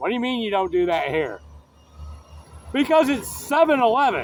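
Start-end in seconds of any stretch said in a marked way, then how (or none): 0.0-1.4 fast, attitude-filled delivery. Retelling arguing with a guy at Seven Eleven: retelling getting an attitude. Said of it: "I get an attitude".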